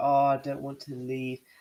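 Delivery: put-on tearful crying voice, drawn out. Mocking a player who cried about leaving the club: mock crying. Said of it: "he's crying about".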